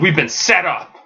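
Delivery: angry outburst. Retelling a comic scene where Gordon yells at them; acting out Damien's anger. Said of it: "he's all pissed".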